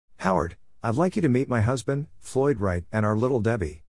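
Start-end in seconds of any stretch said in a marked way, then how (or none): none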